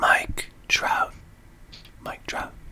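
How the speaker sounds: soft whispered echo.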